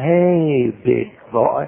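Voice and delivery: sensuous, sultry Southern drawl. Showing the ladies how to say a greeting: sensuous southern accent. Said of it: "Say that, ladies".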